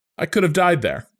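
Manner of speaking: half-kidding playful voice. Retelling a professor's remark to the class, in a somewhat joking voice. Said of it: "in a somewhat joking voice".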